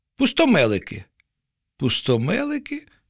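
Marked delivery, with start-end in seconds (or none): 1.8-2.8 bewildered, puzzled, higher pitch. A fish hears an unfamiliar word and repeats it back: puzzled. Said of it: "не второпала риба".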